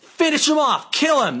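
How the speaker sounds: high-pitched yelling. Retelling a woman yelling at him during a fight, imitating her yell. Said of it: "She yelled at him".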